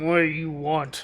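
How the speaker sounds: orcish man character voice. Voicing an orcish man questioning the party: orcish man voice. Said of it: "seven-foot-tall orcish man stands there".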